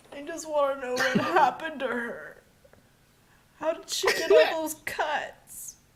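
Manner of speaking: shrill, loud, heaving sobbing through the words. A character who starts crying even harder speaks through it, sobbing while speaking. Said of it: "He starts crying even harder, and he's like heaving as he sobs".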